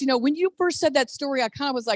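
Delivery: ordinary delivery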